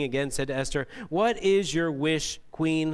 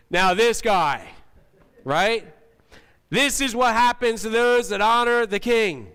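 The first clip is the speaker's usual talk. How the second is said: big, booming announcer voice, loud and raised; 7 semitones higher, 7 dB louder than usual. Imagining someone announcing in the center of town, the speaker uses a big booming James Earl Jones voice. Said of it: "big booming, you know, James Earl Jones kind of voice".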